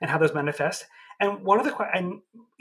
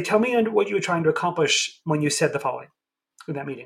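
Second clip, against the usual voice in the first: ordinary delivery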